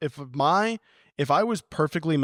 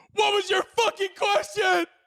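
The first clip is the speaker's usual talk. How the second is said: very high, frazzled, overstimulated angry snapping. Redoing an audition as a seventh grade English teacher, overstimulated angry snapping. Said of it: "I'm really overstimulated and they're really starting to piss me off".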